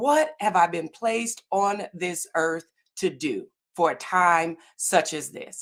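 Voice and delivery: ordinary talk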